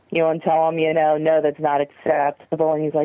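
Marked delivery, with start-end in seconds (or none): none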